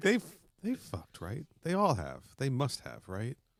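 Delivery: acted incredulous tone, high swooping sing-song. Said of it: "she's like".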